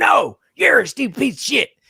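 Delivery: mock, very high, shrill, loud screaming. Retelling a family argument where Dad yells back: imitating Dad screaming. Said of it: "as he's screaming".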